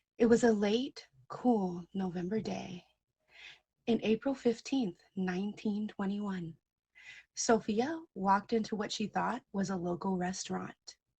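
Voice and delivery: theatrical, dramatic storytelling narrator performance voice. Starting to tell a made-up story to everyone: performance voice. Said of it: "my performance voice".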